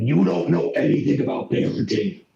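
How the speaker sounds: harsh, upset, rough, creaky snarling voice. Voicing Una, who is getting a lot more upset, in Una's snarling voice. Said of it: "you're hearing a much more snarling voice as Una is getting a lot more upset".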